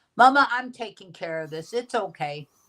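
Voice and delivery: plain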